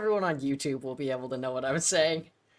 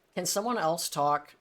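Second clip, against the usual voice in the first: ordinary delivery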